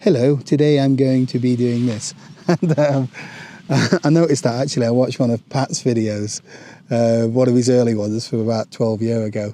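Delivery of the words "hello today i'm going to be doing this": put-on telephone voice. Speaker recalling narrating his first phone-filmed video, in a put-on telephone voice. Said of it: "It was like my telephone voice".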